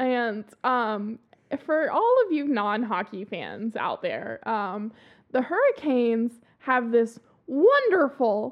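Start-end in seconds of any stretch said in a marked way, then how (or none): 5.3-8.5 thick, dripping, mocking sarcastic praise. Describing a team's goal celebration to non-hockey fans: dripping sarcasm. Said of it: "you hear the dripping sarcasm".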